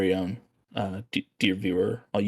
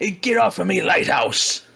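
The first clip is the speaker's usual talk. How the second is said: put-on pirate voice, higher and louder; 10 semitones higher, 5 dB louder than usual. Playing a lighthouse keeper telling the viewer to get down: pirate voice like Willem Dafoe. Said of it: "talk like a pirate, much like Willem Dafoe does".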